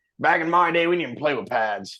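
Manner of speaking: put-on grumpy old grandpa voice. Mocking another speaker's complaint, acting out a grumpy grandpa: mock grumpy old grandpa voice. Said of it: "you sound like a fucking grandpa from Vietnam".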